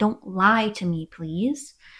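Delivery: very slow, angry, mad, begging tone. Retelling an argument with Dre, the speaker acts out getting mad. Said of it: "And I got mad".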